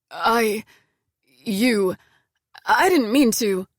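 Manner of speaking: halting, faltering stammer. He starts to explain before another cuts him off: stammering. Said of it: "he stammers".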